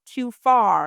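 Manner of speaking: usual speaking voice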